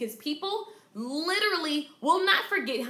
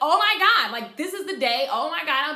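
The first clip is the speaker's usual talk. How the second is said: mock panicked voice, louder; 7 dB louder than usual. Speaker retells reacting to a technical crash, acting out own panic. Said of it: "and I was panicking".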